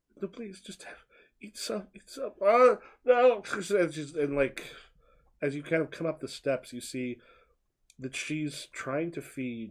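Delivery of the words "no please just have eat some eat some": soft, high-pitched, softly weeping voice. Narrating the woman who is trying to feed someone, crying softly. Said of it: "kind of like crying softly".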